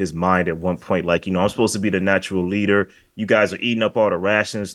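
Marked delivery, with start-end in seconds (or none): none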